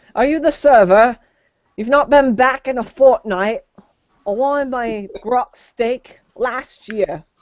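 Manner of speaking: high-pitched put-on London Cockney accent. A player speaking in character among other players, Cockney accent. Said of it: "Why are you speaking like a Cockney?".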